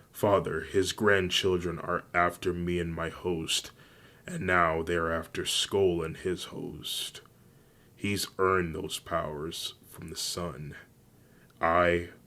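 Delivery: plain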